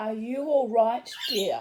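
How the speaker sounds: put-on strong, heavily laid-on Polish accent. Retelling what a man asked them, in a strong Polish accent. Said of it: "he said in a strong Polish accent".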